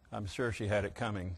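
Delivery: small, very soft, quiet, low voice. Retelling a story, quoting a man who leaned over, in a small, soft voice. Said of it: "said in a small, soft voice".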